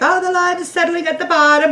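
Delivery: high, loud, freaked-out alarmed voice. Retelling video commenters' reactions, imitating them freaking out. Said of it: "How do I know they use that voice?".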